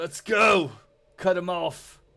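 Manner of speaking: loud shouting. A game master voices a man in a tower calling to his brother, yelling. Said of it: "And he yells to his brother".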